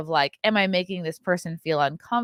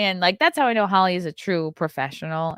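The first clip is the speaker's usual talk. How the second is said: plain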